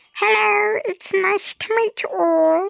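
squeaky, high-pitched voice. A gamer introduces a pet Skelly Rex and has it greet viewers, in a squeaky Scully voice. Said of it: "Scully is quite squeaky".

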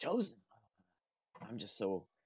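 drowsy, half-awake voice. Narrating a tired old man who wakes briefly as he is lifted: briefly waking, half-asleep. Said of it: "he does kind of briefly wake up".

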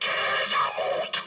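growling demonic voice. Telling a haunting story, voicing what the priest heard upstairs, in a growling voice. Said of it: "heard a growling voice saying".

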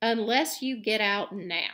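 sounding brave. Harry answers Malfoy's challenge to fight, speaking bravely. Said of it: "said Harry more bravely than he felt".

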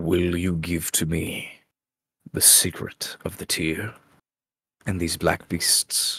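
ringing, echoing, reverberating voice. A voice asks the player to give up a secret; ringing, echoing voice. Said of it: "this voice kind of rings back a little bit and says".

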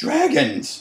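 very high, revolted, disgusted voice. A worried woman at the first aid tent meets a panting boy: disgusted. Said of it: "she said in a disgusted tone".

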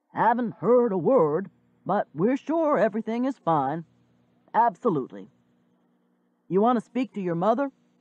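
loud, booming put-on voice. Retelling a man on the phone passing it to the speaker, Santa Claus voice. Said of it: "He talks louder than normal, a Santa Claus voice".

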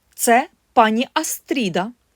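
said with pride. A narrator reads the mother introducing her guest to the family, proud. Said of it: "гордо проказала мати".

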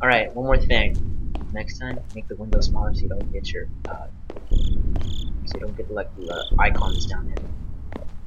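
slow, tense, hushed whisper.

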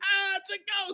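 shrill, very high, spooked yelp. Retelling how the guys react when Jesus appears, imitating a freaked-out cry. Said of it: "They're totally freaked out".

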